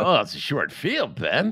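mocking imitation. Mocking a Yankees fan guest's excuse: mocking imitation of the guest. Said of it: "typical Yankee fan, already undercutting".

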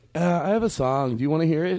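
girlish put-on voice. Acting out an imagined ninth-grade meeting with a boy: put-on girl voice. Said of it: "That's my girl voice".

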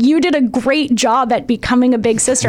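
ordinary talk

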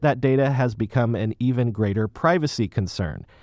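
normal talking voice

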